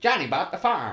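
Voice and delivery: bad, clumsy, robot-like American accent. Speaker tries out an old idiom as the other objects, in a bad robot-like American accent. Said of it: "you sound like a bad robot trying to speak with an American accent".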